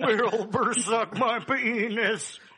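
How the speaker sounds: very slow, stretched voice, "penis" drawn long. Showing off an impression after boasting about it: mean Mister Ed impression. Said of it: "I do a mean Mister Ed".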